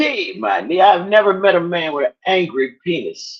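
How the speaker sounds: usual speaking voice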